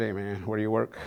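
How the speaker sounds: plain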